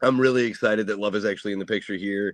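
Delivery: plain reading voice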